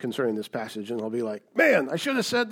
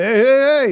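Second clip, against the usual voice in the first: very loud, high, belted-out cartoon voice; 12 semitones higher, 10 dB louder than usual. Retell how Laban invites the visitor into the house, in a Fat Albert impersonation. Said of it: "That's my Fat Albert impersonation".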